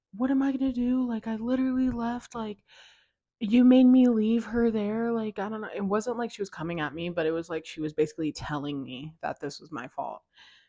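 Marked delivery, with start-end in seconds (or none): 0.2-5.1 mock hollering, yelling in a blaming tone. Retelling a friend in the car blaming her: imitating a friend yelling. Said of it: "yelling in my ear".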